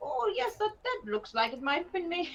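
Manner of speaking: put-on soft little old lady way of talking. Describing rambling to the group while they browse, in a little old lady voice. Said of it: "talking like a little old lady".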